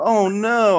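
acted, high-pitched, crestfallen little kid voice. Retelling a kid's reaction to a dress-up day: imitating a disappointed kid. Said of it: "you can hear him in his voice".

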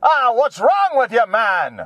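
put-on old-country Russian accent. Retelling how a grandpa used to say something: old-country accent. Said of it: "he had this accent from old country accent".

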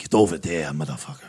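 put-on British accent. Describing an imagined tall woman in leather: put-on British accent. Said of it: "a British accent".

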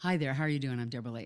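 put-on American accent. An Australian recalls walking into auditions introducing herself: fake American accent. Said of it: "you have to walk in with the accent".

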